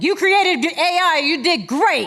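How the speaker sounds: acted-out yelling, loud, slow and high. Retelling how the AI tool spoke at a challenge's end: imitating an AI yelling. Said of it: "it just started to yell at them".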